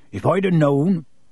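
ordinary talk

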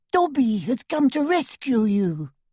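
tiny, squeaky, trembling, quivering voice. Reading a story, Dobby speaks to the one he came to rescue, tiny squeaky quivering voice. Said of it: "he squeaked in the tiniest quiver of a voice".

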